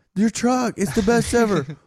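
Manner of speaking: put-on shrill, very high drunk shouting. Retelling drunk girls in the mezzanine yelling down: imitating drunk girls yelling. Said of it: "drunk girls that kept, like, yelling to us".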